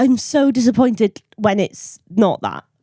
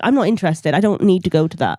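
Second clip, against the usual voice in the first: ordinary delivery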